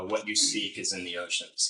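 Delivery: plain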